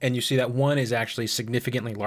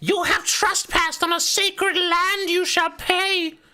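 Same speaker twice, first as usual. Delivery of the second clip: piercing, very high, shrill harpy shriek; 5 dB louder than usual. Game narrator voicing a creature above the campground, shouting harpy voice. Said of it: "one of them shouts".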